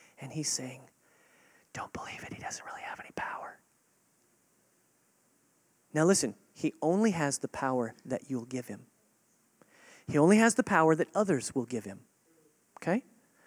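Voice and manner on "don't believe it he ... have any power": very soft whisper. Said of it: "The Holy Spirit is whispering to you".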